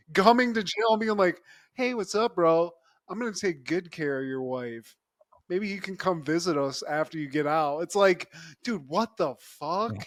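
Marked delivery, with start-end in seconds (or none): 1.8-7.8 put-on, mocking taunting tone. Retelling a movie villain visiting a man in jail: imitating a taunt. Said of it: "just starts taunting him".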